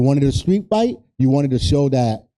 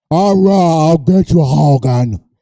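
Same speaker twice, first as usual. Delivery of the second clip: put-on deep wrestler voice, louder; 3 semitones higher, 7 dB louder than usual. Doing a bad Andre impression after talking about wrestler voices: Andre impression. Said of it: "That was my Andre".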